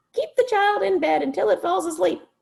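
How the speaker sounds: very high, squeaky monster voice. Narrator reads Morgan, the orange monster, answering Mister Z in a squeaky voice. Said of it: "The orange monster bounced and squeaked".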